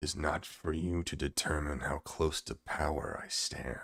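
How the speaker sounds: hushed, rough, gravelly tone. Narrating the scene, the speaker voices the priest answering the hag in a gravelly voice. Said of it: "in an equally gravelly voice".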